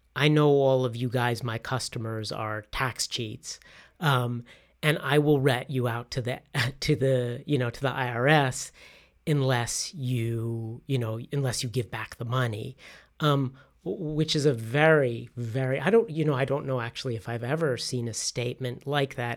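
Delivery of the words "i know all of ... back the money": ordinary talk, nothing marked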